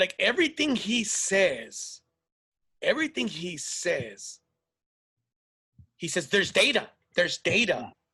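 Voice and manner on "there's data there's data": robotic know-it-all tone, stated as settled fact. Mocking a commentator who talks like he knows everything: Ben Shapiro know-it-all voice. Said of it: "This guy talks like he knows everything".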